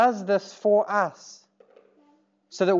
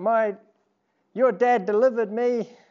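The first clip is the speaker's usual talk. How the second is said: higher, teasing, mocking young girl voice. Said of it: "she was like".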